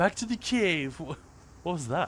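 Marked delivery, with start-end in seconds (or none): 0.0-1.0 put-on British accent, much higher pitch. Voicing a game character during play, British accent. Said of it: "the British accent, eh, comes and goes".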